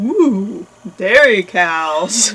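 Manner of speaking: bull character voice. Quoting the bulls about the passing cows: impression of the bulls from the movie. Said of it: "This is what the bulls say about the lady cows".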